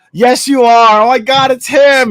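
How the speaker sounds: overdone bad Staten Island accent, loud and high. Act out a woman at a table insisting that you are Murr, in the worst Staten Island accent. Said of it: "in the worst Staten Island accent".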